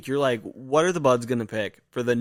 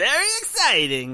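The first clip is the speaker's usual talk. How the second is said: put-on Eastern European accent with pitch raised high; 8 semitones higher than usual. A podcast host, just after the show intro, does a Borat voice. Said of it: "That's my Borat impression".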